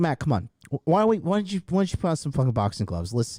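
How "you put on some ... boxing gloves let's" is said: normal talking voice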